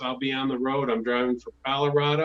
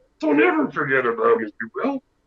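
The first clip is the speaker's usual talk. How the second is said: loud, cranky, indignant put-on voice with swinging pitch; 5 dB louder than usual. Doing an impression for another speaker: angry Yoda voice. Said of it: "runs into an angry Yoda".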